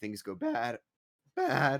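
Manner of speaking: voice cracking mid-phrase, high and loud. Player laying out a plan to the group, voice cracking. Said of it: "voice crack".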